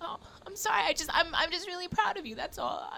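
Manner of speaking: high, soft, teary, choked-up voice with audible pride.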